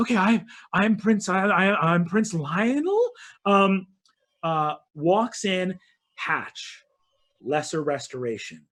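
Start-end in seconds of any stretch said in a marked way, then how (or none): 0.0-3.1 dazed, addled royal voice, halting and stumbling. Voicing a prince introducing himself to a player: addled prince voice. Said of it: "This sort of addled prince".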